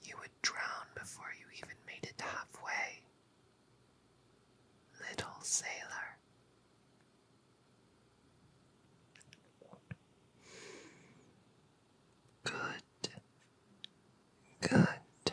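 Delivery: soft, hushed, breathed-out whisper. A siren speaks to a captive little sailor in her cave, whispering. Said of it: "Why am I whispering?".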